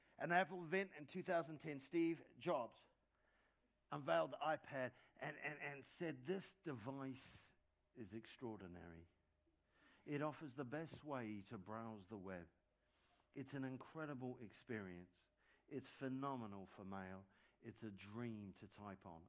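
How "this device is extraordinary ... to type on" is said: put-on British accent, ad voiceover style. Quoting a speech unveiling the iPad at an Apple event: put-on British accent. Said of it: "they do that in a British accent".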